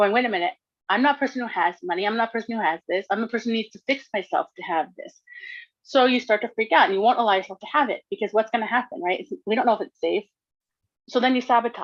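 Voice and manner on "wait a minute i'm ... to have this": ordinary delivery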